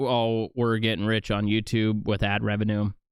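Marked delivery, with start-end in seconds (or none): none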